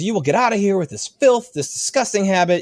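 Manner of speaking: angry screaming voice. Retelling a bank worker's reaction in a cartoon scene: imitating someone screaming angrily. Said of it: "And she's screaming".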